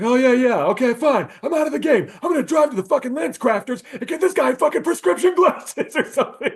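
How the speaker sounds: mock high-pitched, shrill, loud, fed-up, exasperated yelling. Retelling a film scene of yelling at the ref: imitating Jason Sudeikis yelling. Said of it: "Jason Sudeikis yelling at the ref".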